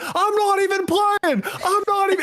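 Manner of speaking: very high, stretched-out, drawn-out screaming. Describing a Call of Duty player yelling at the other team: imitating Adam Killisloss screaming. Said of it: "he's literally screaming".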